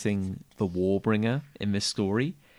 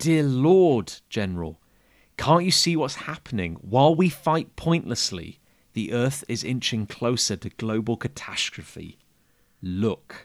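usual speaking voice

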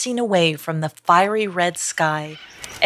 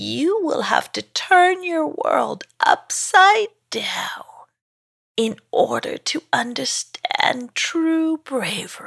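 slow, creaky, high, drawn-out dragon voice; 7 semitones higher than usual. Reading a story aloud, voicing the forest dragon's reply in a creaky voice. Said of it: "said the forest dragon in a creaky voice. / [name] looked up to see a forest dragon made of trees who was staring right down at him. / said the forest dragon in a creaky voice. / I have been in this f".

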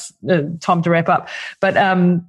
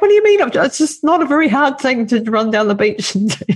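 exasperated, retorting tone. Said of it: "and I'm like".

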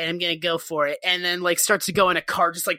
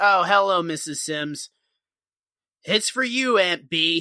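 play-acted slow, grudging, resentful, put-upon manner. Retelling a man handing the phone to an aunt, mock-resentful. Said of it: "he's like resentful about it".

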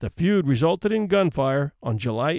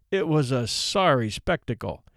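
ordinary delivery

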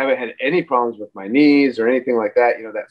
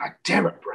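put-on whispered, disbelieving, exasperated tone; 7 semitones higher, 8 dB quieter than usual. Retelling how he reacted to the speaker in that moment, mock-incredulous retelling. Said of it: "it was more incredulous".

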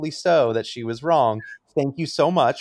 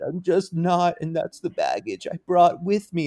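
mock crying, higher; 6 semitones higher than usual. Retelling what a contestant said while crying to Cody: imitating someone crying. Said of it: "he's crying to Cody and being like".

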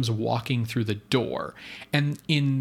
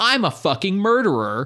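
loud, high-pitched yell at full tilt; 7 semitones higher, 6 dB louder than usual. Complaining about characters sharing one house, retelling a character's yell. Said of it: "finished yelling".

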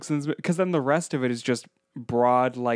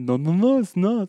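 louder mock Swiss accent. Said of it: "That was my Swiss impression".

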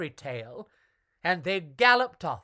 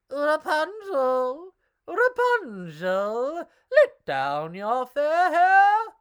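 put-on old witchy calling voice, one word drawn out; 9 semitones higher, 6 dB louder than usual. A prince calls up to Rapunzel's tower while the witch is away, old witchy voice. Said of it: "he called in an old witchy voice".

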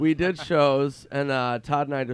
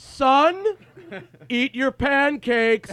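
insistent, raised, high-pitched, very slow, drawn-out voice; 12 semitones higher, 5 dB louder than usual. Retelling his dad doing a bit in front of people, retelling a raised voice. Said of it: "his voice gets louder".

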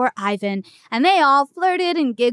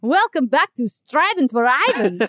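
put-on Russian accent, cartoon creature voice. The show's voiceover guy welcomes listeners back, Russian Tasmanian Devil voice. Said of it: "That sounded like the Russian Tasmanian devil".

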